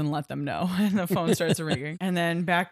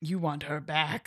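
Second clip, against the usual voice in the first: eerie, creepy talking-werewolf voice; 4 dB quieter than usual. Recapping a film scene, speaker quotes a werewolf addressing the trapped Devin: creepy. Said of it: "creepily addresses him like".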